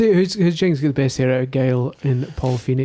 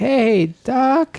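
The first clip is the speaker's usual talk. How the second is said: put-on old man voice, higher; 10 semitones higher than usual. Quoting what the old character says in the game: imitating old Marty McFly. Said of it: "That's what he says".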